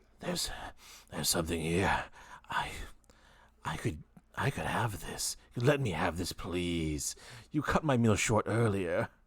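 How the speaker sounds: full-voiced creature stage whisper. Game master voices the symbiote whispering in the player's ear, whispering symbiote voice. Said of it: "the symbiote begin to whisper in your ear".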